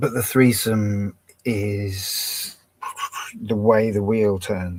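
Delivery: very slow, drawn-out speech.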